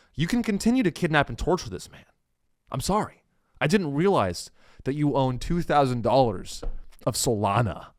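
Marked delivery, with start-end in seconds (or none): 2.7-7.8 overly sorry, grovelling, apologetic tone. Acting out a cop apologizing to a suspect: imitating an apologetic cop. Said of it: "they think that the cops like".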